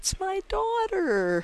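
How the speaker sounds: high, slow, joyful, proud call.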